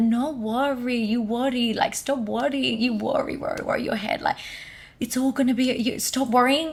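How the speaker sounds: put-on Italian-accented English. Retelling what a man told them, imitating his Italian accent. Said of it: "he said it in his Italian accent".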